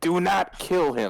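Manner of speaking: high-pitched, drawn-out yelling. Yelling at the others in the game not to kill him: yelling an order. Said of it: "as I yell at every single one of them".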